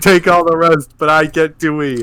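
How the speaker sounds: usual speaking voice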